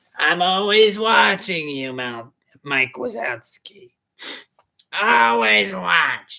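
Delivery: loud, booming male cartoon-creature voice. Doing an impression of the Slug from Monsters, Inc. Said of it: "a male version of the Slug from Monsters, Inc".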